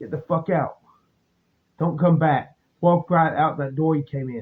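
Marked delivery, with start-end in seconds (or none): 0.0-2.6 put-on menacing, threatening voice. Retelling how a bar manager ordered him out: imitating a menacing order. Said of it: "He comes out from behind the counter menacingly".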